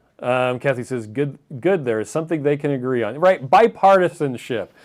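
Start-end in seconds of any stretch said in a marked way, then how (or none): none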